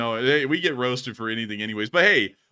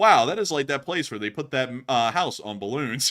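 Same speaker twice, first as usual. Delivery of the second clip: usual speaking voice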